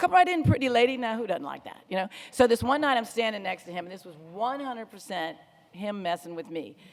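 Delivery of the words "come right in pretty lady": loud, high, big host's welcoming patter. Retelling how a coworker greeted guests: imitating George's accent. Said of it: "he just talked like that".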